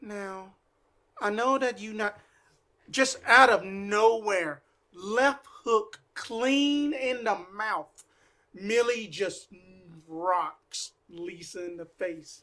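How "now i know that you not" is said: sheepish, timid voice. Voicing a character walking over to another after a fight: sheepish. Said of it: "She just sheepishly go over there".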